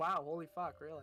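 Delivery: dripping with sarcasm, feigned surprise. Voicing a character answering a question: very sarcastic in character. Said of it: "She's saying this very sarcastically".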